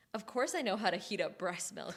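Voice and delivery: mock snarky, dripping sarcasm, obvious-duh tone. Recapping a show scene where a character heats breast milk, mock-sarcastic. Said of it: "sarcastically is like".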